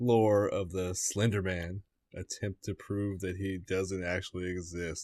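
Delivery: slow, soft, deliberate reading.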